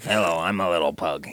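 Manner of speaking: very low, deep talking-pug cartoon voice. Describing how cars sound in their head, doing an anthropomorphic pug voice. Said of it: "Isn't that a pug voice?".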